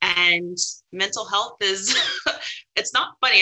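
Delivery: talking through a giggle, laughing through words. Talking about mental health and its consequences, laughing while talking. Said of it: "I don't know why I'm laughing".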